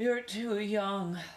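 half-swallowed, high mumble. Keith answers Ralph, who wants to take his sports car, mumbling. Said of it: "mumbled Keith".

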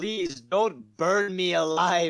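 very loud, desperate, pleading voice. Retelling a film scene where a woman pleads for her life: imitating a pleading woman. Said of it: "the lady is pleading for her life".

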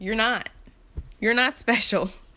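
cutting, harsh, mean dismissive tone. Telling off men who put women down: mean, harsh tone. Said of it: "That sounded so mean".

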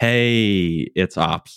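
put-on half-asleep, sleepy voice. Retelling Ops phoning the bridge at breakfast: imitating a half-asleep voice. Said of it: ""I'm totally still asleep" voice".

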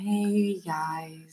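calm, soft ASMR meditation-guide voice. Imitating another speaker's podcast intro: imitating an ASMR-like podcast voice. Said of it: "his voice is like at the beginning, he goes".

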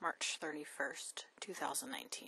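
unvoiced, soft whisper.

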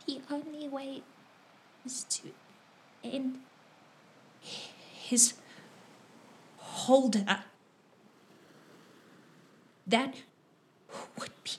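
hushed voice. Voicing a character whispering to the others: whispering. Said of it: "Sidian whisper".

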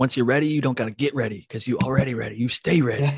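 half-serious, joking, intense coach pep-talk voice. Joking around, the speaker says it in a mock-intense voice. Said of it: "joking when I said that with the intense voice".

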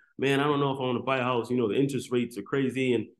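plain

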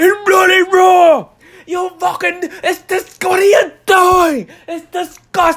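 horrible put-on British accent, very high, loud, shrill. Describing a man's on-camera persona, the speaker imitates him in a horrible British accent. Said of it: "that's my horrible British accent right there".

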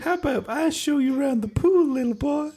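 very high, pitched way up, halfway cartoon voice. Acting out an imagined man speaking to a little boy: half Mickey Mouse voice. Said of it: "Why have you gone half Mickey Mouse there?".

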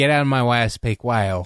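plain

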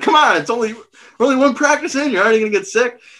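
mock teasing holler, voice way up high, playful. Recalling throwing up at his first track practice, imitating Hamilton's playful yelling. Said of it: "like a playful yelling at you".

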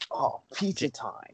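whispered, breathy turtle character voice. Doing the Michelangelo impersonation while about to eat pizza: Michelangelo impersonation. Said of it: "Michelangelo, uh, impersonation".

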